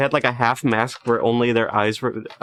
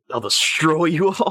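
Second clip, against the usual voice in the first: full evil villain voice, slow and pitched up; 5 semitones higher than usual. Retelling what the caught villain says: imitating an evil villain. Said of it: "he's, like, so evil".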